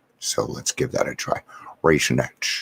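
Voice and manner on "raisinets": put-on Scottish accent, film-star voice. Trying the first word learned, in a Sean Connery voice. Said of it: "in the voice of Sean Connery".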